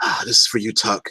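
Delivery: hushed, low mutter under the breath. Speaking in character toward Whisperlink while staring defiantly: said under the breath. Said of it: "I'm under my breath".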